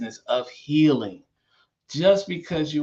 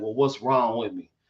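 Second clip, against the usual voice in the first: put-on sarcastic tone; 3 semitones lower than usual. Retelling how someone sarcastically asks the nurse about themselves: mock-sarcastic retelling. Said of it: "be sarcastic with it".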